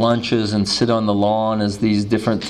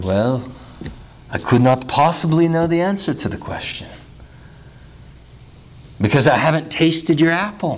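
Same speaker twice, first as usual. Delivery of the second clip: put-on thick German accent, higher; 5 semitones higher than usual. Speaker retells Dr. Tillich answering a man's question: Dr. Tillich's thick German accent. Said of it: "in his thick German accent".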